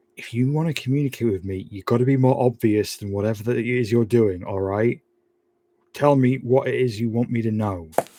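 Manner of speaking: private, confiding aside. Speaking to a creature behind glass, hand on it: saying under breath. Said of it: "I'm gonna say under my breath".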